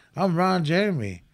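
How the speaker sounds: usual speaking voice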